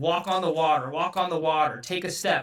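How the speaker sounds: plain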